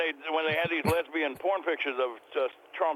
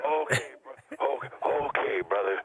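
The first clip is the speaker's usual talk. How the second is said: put-on radio-style voice, pitched lower; 3 semitones lower than usual. Answering whether Tony really calls people brother: imitating Tony Gray.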